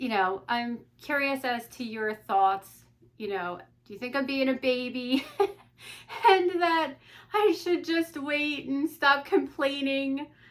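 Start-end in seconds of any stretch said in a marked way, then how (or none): 3.2-10.3 high, self-conscious talking through laughter. Asking the listener for their thoughts on whether to wait, laughing.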